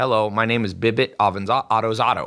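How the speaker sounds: put-on little child voice, formal and proper. Retelling how a four-year-old introduced himself at a party: imitating Jacob's formal self-introduction. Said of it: "he would walk around and formally".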